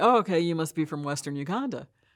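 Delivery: ordinary delivery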